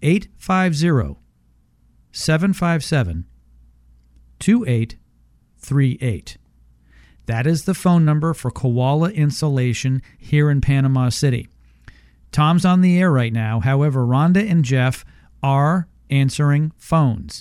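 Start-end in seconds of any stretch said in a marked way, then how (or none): 0.0-6.4 very slow, deliberate, each word spaced and drawn out. On air, repeating the phone number one more time for callers, very slowly. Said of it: "I'm going to say it one more time very slowly".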